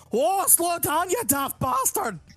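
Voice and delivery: mock-angry Scottish Irish woman voice. Describing a game's characters, the speaker voices an angry scottish irish woman. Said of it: "And then there's an angry Scottish Irish woman".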